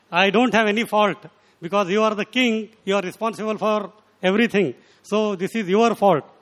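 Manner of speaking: normal talking voice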